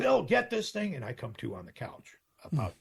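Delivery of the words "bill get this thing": shrill, very high, very loud yell. Retelling the bus mom yelling during a cardiac incident: imitating Norma yelling. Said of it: "she yells".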